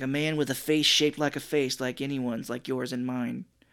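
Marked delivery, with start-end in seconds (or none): none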